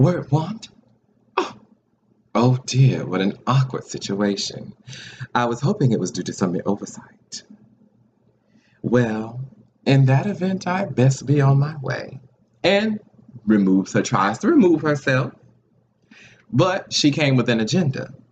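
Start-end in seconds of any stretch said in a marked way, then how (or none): 0.0-12.2 put-on wounded villain voice, higher pitch. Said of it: "plays the victim".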